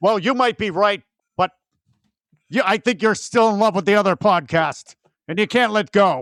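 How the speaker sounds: mock dramatic confrontation. Acting out a staged quarrel with a co-host: acted dramatic tension. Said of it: "Eric and I are playing out some".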